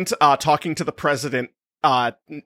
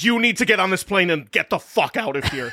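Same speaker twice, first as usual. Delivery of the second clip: mock urgent, freaked-out, frantic yelling; 3 semitones higher than usual. Retelling how a character in a book reacts to news: imitating someone yelling. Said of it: "Literally yells at Obama".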